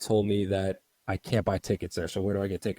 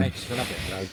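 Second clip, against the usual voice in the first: normal talking voice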